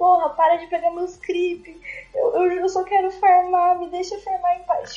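acted, drunken, loud, high-pitched, tearful crying whine. Retelling what he said while drunk, imitating his drunk self crying. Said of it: "Chorando, obviamente".

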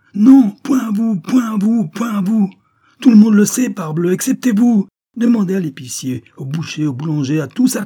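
very high, very loud, shrill, choked sputtering rage. She confronts him, stammering, choked with anger. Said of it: "Elle bredouillait, étranglée par la colère".

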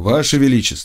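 plain reading voice

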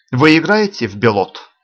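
ordinary delivery

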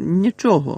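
grumbling. Narrating, Harry answers everyone in the changing room asking what happened: grumbled. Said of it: "буркнув він".

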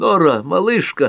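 gleeful, mouth full. Narrator reads a man greeting a guest who suddenly appeared, joyful exclamation, mouth full. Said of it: "радостно воскликнул с набитым солеными орехами ртом".

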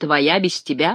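mocking, derisive tone. Narrator reads one man's retort to another who claims his dream; mocking remark. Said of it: "насмешливо заметил Гефестион".

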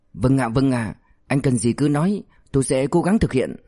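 plain

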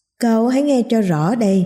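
usual speaking voice

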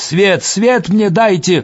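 high-pitched, mild, modest cry. Dropping to her knees beside a beaten man, she shouts. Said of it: "кричит".

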